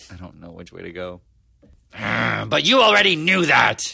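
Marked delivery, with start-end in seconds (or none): 1.9-3.9 loud, rough, gruff put-on growly voice. Signing off the episode with a closing line: gruff, growly put-on voice. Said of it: "we're just doing gruff, growly voices now".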